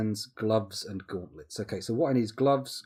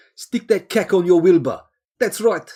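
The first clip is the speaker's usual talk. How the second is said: very loud, high-pitched, slight South African accent; 9 semitones higher, 14 dB louder than usual. Answering chat with a joke line in a put-on south african accent. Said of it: "A bit South African".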